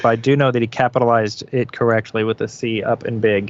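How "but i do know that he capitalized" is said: usual speaking voice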